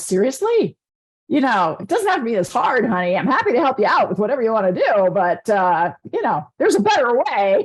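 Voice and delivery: put-on chuckling through the words, amused laughing speech. Acting out the divine speaking to someone struggling alone: imitating someone laughing while talking. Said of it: "the divine's kind of laughing, going".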